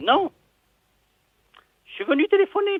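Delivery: high put-on woman's voice.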